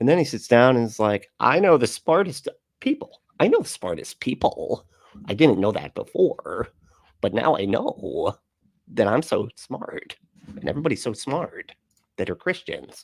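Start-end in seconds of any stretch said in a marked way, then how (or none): 1.4-13.0 terrible, muddled voice of a baffled, confused man. Mocking a man who always looks confused: terrible impression of a confused man. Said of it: "that's a terrible impression".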